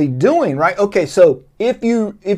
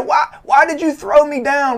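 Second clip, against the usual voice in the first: put-on woman's fake protesting voice, higher; 8 semitones higher than usual. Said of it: "throws herself on a coffee table".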